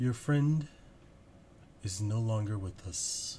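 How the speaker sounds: eerie creature voice, many voices speaking at once. Narrator voices a many-headed creature leaning down to the party, many heads speaking at once. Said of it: "many heads, which are all speaking at the same time, making this uh, weird iconic voice".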